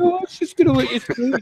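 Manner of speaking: high, sweet put-on voice. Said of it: "He's like".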